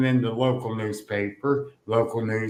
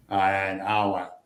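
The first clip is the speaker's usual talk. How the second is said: ordinary talk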